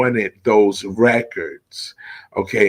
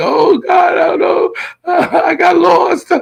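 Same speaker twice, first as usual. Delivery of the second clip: mock very high, rough panicked shriek; 5 dB louder than usual. Retelling being caught on the train platform: imitating own past screaming. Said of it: "and I'm screaming".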